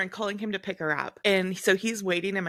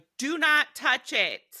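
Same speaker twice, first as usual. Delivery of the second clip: mock high, drawn-out hollering, as if from far off; 5 semitones higher than usual. Retelling what someone shouted at them from across the house: retelling a yell. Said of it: "He's just yelling at us from across the house".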